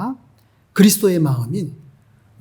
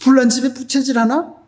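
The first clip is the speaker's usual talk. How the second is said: high, irritated, put-on angry backtalk tone; 7 semitones higher than usual. Retelling how a man snapped back at a missionary, imitating an angry man. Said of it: "그러면서 막 화를 내는 거예요".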